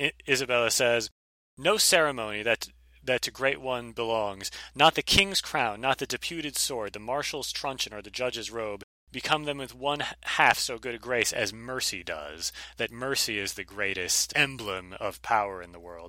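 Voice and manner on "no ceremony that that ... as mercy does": normal talking voice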